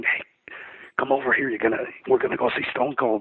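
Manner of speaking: put-on quiet, hushed speech. Retelling quietly calling a friend over in an airport: imitating speaking quietly. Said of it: "I was trying to be quiet and saying".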